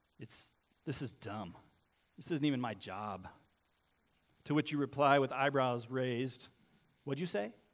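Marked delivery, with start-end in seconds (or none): 0.2-3.3 low, slow, angry grumbling mutter. Retelling what a parent mutters as you walk away; mock-angry under-breath mutter. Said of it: "under their breath, in a low, angry voice".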